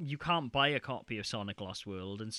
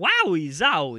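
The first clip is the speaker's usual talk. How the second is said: booming, shrill, very loud, high put-on celebrity impression voice; 5 semitones higher, 14 dB louder than usual. Joking about a game character's line: Christopher Walken voice. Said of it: "it's a Christopher Walken!".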